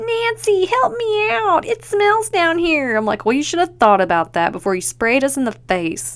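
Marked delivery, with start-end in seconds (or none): 0.0-3.0 tiny, very high, squeaky voice, slow and drawn out. Retelling a scene where Lisa falls in the pit: Lisa's little pipsqueak voice. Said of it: "in her little pipsqueak voice, she's like".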